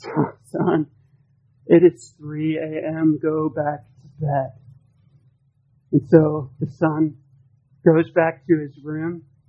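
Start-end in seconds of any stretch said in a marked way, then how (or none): 0.0-4.5 put-on groggy voice, much lower, slower. Telling a story, voicing the dad woken by his son at 3 a.m., put-on groggy voice. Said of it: "with a groggy voice".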